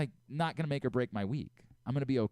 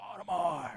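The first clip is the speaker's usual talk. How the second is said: mock mild called-out yell, pitched up; 5 semitones higher than usual. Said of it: "he just starts yelling, like".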